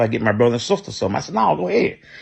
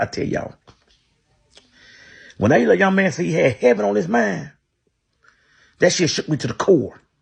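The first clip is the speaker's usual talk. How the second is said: choked-up voice catching with emotion, pitched up; 7 semitones higher than usual. Retelling buying food for a hungry boy, choked up. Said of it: "excuse me for getting a little choked up".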